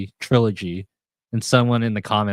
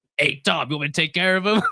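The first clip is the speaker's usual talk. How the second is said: late-fifties-style Brooklyn tough-guy voice, pitched up; 8 semitones higher than usual. Describing the cartoon's other cats in conversation, doing a Tom and Jerry alley-cat thug voice. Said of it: "like late fifties Brooklyn thugs".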